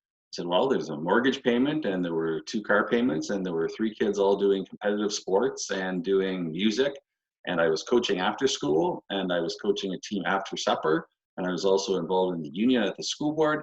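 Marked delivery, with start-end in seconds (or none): none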